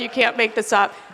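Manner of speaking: normal talking voice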